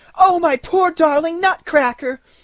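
distressed outcry, very high and loud. A girl takes her broken Nutcracker away from a boy: crying out. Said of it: "Marie cried".

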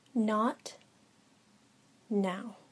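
firm, steady, credible, with meaningful pause. A teacher answers a student's request in class, firm, with a meaningful pause. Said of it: "His voice was firm and credible, with a meaningful pause".

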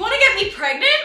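put-on, very high, shrill, blurted shriek. Retelling their reply after a woman spoke into their ear, acting out a scream. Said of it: "I screamed".

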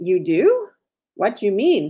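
plain reading voice

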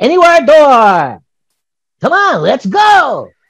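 very high, loud, slow, swooping cartoon voice. Quoting the robot cat opening a magic door: Doraemon character voice. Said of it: "So he's like".

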